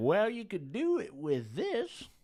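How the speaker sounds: put-on high, wide-swinging, senile old prospector voice.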